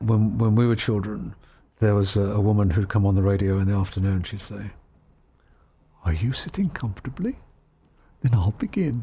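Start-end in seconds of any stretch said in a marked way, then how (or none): 6.1-9.0 sugary, swooping, sing-song, staccato storyteller voice. Recalling a woman on afternoon radio from childhood: imitating a honey-dripping voice. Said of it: "honey dripping from her tongue voice".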